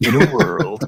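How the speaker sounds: movie trailer announcer voice. Recalling how every movie trailer started: Don LaFontaine trailer voice. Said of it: "It was like".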